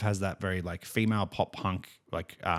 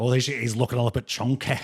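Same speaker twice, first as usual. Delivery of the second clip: put-on fake Scottish accent; 2 semitones higher, 3 dB louder than usual. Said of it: "The Scottish accent really gets to you".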